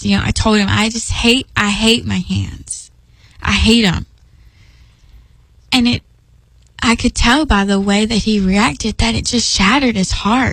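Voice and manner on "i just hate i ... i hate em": mock, slow, heavy disdain and disgust. Retelling own past words to daddy: imitating own disdain and disgust. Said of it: "with such disdain and disgust".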